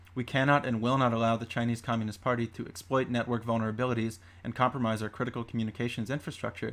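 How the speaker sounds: ordinary talk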